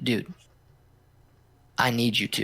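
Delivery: mock dead-serious, earnest tone. Retelling how a man pressed for a ride: imitating a serious tone. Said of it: "with this, like, serious tone".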